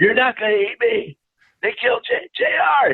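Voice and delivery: acted, very high, shrill, swooping, climbing scream. Telling of a man on a bar screaming at masked people, imitating him yelling. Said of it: "He's yelling".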